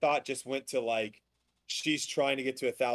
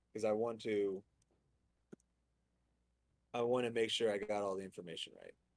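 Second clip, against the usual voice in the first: softer, lower and quieter; 4 semitones lower, 7 dB quieter than usual. Talking on a patio after being told to lower their voice, talking a little softer. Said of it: "I'm gonna talk a little softer".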